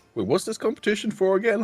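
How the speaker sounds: very high, loud blurted delivery with rising pitch. Asking in character what the competition is for: said loudly. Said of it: "I say loudly".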